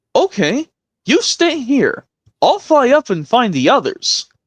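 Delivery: very high, drawn-out, swooping sing-song character voice. Doing an impression of a scene from Not a Problem. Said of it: "let me see if I can do another impression".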